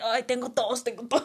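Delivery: put-on choking while coughing. Retelling how she faked choking in class: retelling faking a choking cough. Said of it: "le hice así como si me estuviera ahogando".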